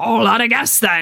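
put-on piratey character voice. Retrying a line in Hagrid's voice during a recording; Hagrid voice. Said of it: "I didn't do a very good Hagrid's voice".

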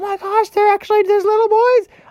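high squeaky mock voice.

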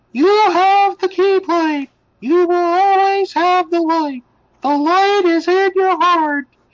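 very high, squeaky cartoon voice. Retelling a scene where Mickey speaks, with listeners laughing: Mickey Mouse impression. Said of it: "What a Mickey impression".

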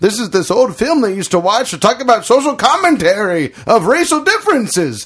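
put-on old person voice. Imagining people in the far future talking about the film: old person voice. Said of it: "Your old person voice sounds like Bane".

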